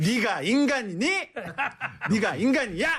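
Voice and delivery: shrill, very high-pitched scolding holler. A doctor guest, asked to try a trending catchphrase, imitating a scolding shout. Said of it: "소리를 지르셔도 지적으로 지르신다".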